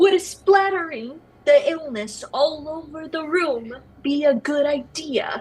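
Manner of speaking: slow, deliberate, drawn-out, word by word. Speaker repeating a question to a player, repeating it slower. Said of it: "I'm gonna repeat what I said slower".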